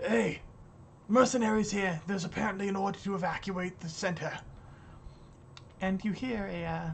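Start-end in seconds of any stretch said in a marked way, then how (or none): 0.1-4.3 loud shout calling out, carrying far. Voicing a guard who calls into the rotunda: shouting into a rotunda. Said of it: "he turns and shouts into the rotunda".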